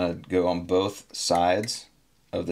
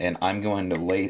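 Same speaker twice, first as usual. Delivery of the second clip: ordinary talk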